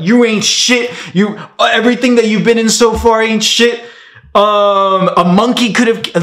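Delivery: angry, high-pitched yelling tirade. Retelling a man ripping into him, imitating someone yelling. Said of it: "He's just yelling at me".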